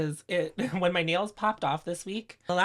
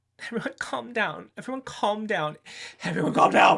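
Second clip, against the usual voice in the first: loud, repeated screaming yell; 3 semitones higher, 4 dB louder than usual. Speaker alone in their room yells at a camera: yelling. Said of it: "I'm yelling. I'm screaming at a camera".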